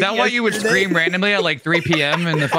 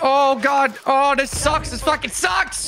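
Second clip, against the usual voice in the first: bad Irish accent, fast and high; 8 semitones higher than usual. Complaining during a game, Irish accent. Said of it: "Why'd you just turn Irish".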